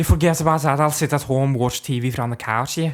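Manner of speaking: put-on Scouse accent. Acting out a skit between lads, talking in a Scouse accent. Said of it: "we'll talk Scouse to each other".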